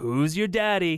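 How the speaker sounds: mock jokey teasing voice. Describing a dad's catchphrase for his daughter, imitating his jokey tone. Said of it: "he says it in that sort of jokey tone".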